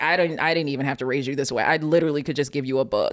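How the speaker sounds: ordinary talk, nothing marked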